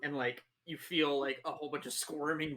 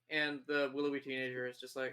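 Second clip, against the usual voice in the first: ordinary delivery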